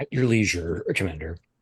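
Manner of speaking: mocking, ironic tone.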